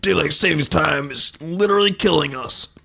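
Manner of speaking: ranting talk-radio host voice. Going right into a Business Insider story with no segue, putting on an Alex Jones voice. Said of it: "put on my Bex Alex Jones voice here".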